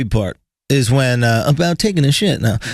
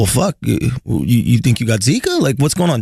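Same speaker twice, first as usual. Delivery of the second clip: put-on wry, teasing, joking sarcasm. Retelling a question to a sneezing traveler at the airport: imitating own sarcastic joking. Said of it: "Joking sarcastically".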